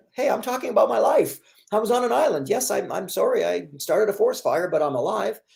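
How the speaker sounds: high, defensive, self-justifying, pleading tone.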